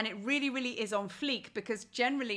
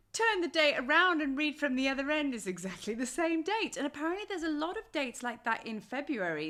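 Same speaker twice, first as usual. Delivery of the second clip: plain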